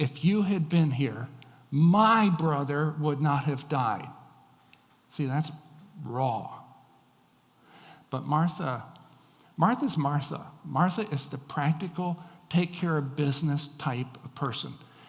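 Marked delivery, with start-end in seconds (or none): 0.0-4.1 heavy emphasis falling on the word "my". Quoting someone's line the way she says it, with stress on my. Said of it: "the emphasis falls on the word my".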